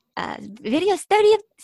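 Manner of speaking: put-on high, loud Japanese accent. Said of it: "the Japanese accent".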